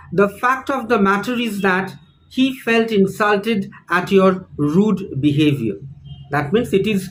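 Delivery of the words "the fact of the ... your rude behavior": plain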